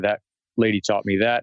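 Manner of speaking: ordinary delivery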